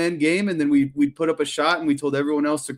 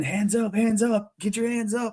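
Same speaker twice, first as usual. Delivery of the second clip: high, repeated, mock sideline coach yell; 7 semitones higher than usual. Retelling pacing during the whole game and yelling: imitating own yelling. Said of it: "I was yelling".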